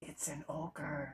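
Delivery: barely audible, very quiet half-whispered voice. Playing a character who turns to the others and half-whispers: half-whispering in character.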